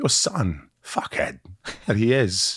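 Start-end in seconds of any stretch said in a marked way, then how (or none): 0.0-1.4 subtle, understated, underplayed delivery. Showing the right way to do a Christopher Walken impression. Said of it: "'Cause Walken's very subtle".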